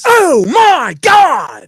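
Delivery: very high, very loud, swooping, hammy overacted delivery. Reacting to news another speaker makes up: William Shatner-style overacting. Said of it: "they're Shatnering".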